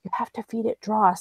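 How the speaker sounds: secretive, close, hushed whisper. Voicing a character who gets close enough to him, whispering in his ear. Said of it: "like whisper in his ear".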